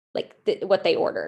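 plain

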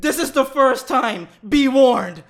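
loud, slow, booming all-caps delivery.

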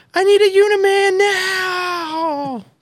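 very high, slow, drawn-out wailing scream. Describing a shot of himself exploding, retelling a scream. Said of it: "I think what I'm screaming is".

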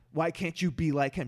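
loud, half-screamed, nearly screaming delivery. Retelling what a teacher said after class: imitating someone screaming. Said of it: "practically screaming at me".

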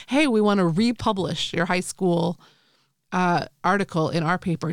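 usual speaking voice

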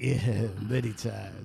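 deep, very low, rough, creaky voice. Retelling how another speaker answered a question: imitating another speaker's reply. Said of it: "'cause he was like".

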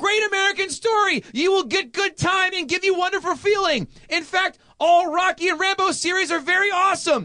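very high, shrill, all-out scream. Reading a line written all in capital letters, screaming. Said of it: "That's why I'm going to scream this".

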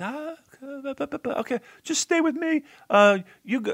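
very high-pitched wrestler voice, pushed way up high. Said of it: "Very, very high-pitched voice".

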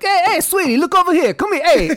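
very high, loud catcalling holler. Speaker describes acting this way whenever a dog walks by: New York construction worker catcall. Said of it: "I definitely turn into like the New York City construction worker".

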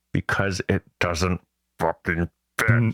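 put-on clenched teeth. Retelling their answer to a question about a return, through clenched teeth. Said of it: "I said through clenched teeth".

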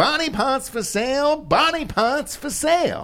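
very high vintage stadium vendor cry. Riffing on a bit with the others, old-timey ballpark vendor voice. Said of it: "It's like you're catching a ball game at Old Comiskey".

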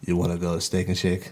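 low, deep half-whisper. Retelling what a woman half-whispered to him, imitating her half-whisper. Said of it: "She started whispering to me like".

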